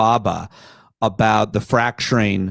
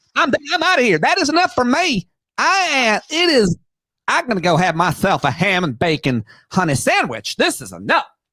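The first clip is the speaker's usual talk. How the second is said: put-on drunken senator voice, higher; 12 semitones higher than usual. Doing an impression of Lindsey Graham quitting, as promised: Lindsey Graham impression. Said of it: "I do a pretty good impression of that".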